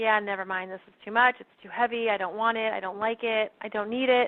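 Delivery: ordinary delivery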